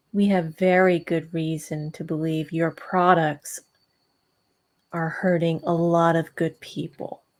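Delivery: cold, icily calm voice with controlled anger. Retelling a line said to someone else, retelling an icily calm line. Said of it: "in a very calm voice, icily calm".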